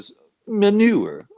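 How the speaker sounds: French accent on manure. Giving an English translation of a word, with a kind of French accent. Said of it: "I said that with a kind of a French".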